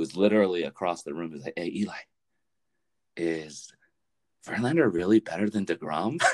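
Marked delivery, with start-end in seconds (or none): 1.6-6.2 mock whispering. Retelling a question whispered to someone across the room: imitating someone whispering. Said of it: "And he whispers to Eli".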